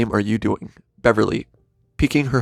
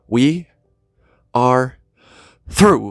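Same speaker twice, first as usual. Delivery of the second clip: pitch climbing each word, short gaps between words. Reading a character's line from a script with its stage directions: raising voice with every word. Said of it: "raises voice with every word".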